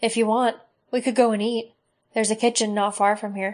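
ordinary delivery

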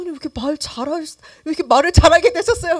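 blunt, high, loud astonished blurt.

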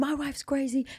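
high, screaming, yelled outburst. Retelling what the man who hit the speaker's car door yelled: imitating a man screaming. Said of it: "And he's just screaming at me".

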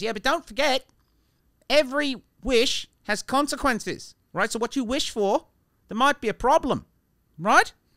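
put-on slipping Australian accent. Telling a story, voicing a genie's warning to him, in a slipping Australian accent. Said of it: "I don't know what's happening with my Australian accent".

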